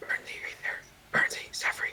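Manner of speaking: whispering. Voicing a character calling to companions in secret: whispering in character. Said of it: "He's whispering".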